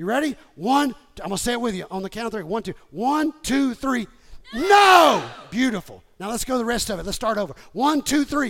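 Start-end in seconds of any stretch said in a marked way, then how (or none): 4.5-5.2 furious, very loud, high-pitched angry shout. Leading a congregation in saying no to the enemy: angry forceful shout. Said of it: "say it like you're ticked off, mad at the enemy".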